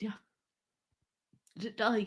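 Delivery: crying while talking. Explaining to another speaker why the cat upset them: crying while talking. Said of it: "So why are you crying?".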